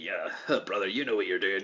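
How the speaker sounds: faux, put-on Scottish accent. Quoting a wrestler's praise, imitating Drew's faux Scottish accent. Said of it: "That's a great impression".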